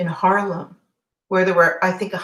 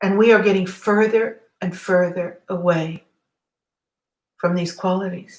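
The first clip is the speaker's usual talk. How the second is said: voice full of emotion, choked up, near tears. Recalling a man's speech about losing his brothers, speaker gets emotional, near tears. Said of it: "Sorry for the emotion".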